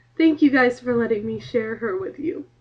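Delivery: emotional, trying to hold it in. Speaker thanks the guys for letting her share her cat, getting emotional. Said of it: "now I'm getting emotional".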